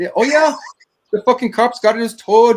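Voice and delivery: thick, broad Irish brogue, very high and loud. Retelling what a construction guy from ireland told them: thick irish accent. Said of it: "had this really thick Irish accent".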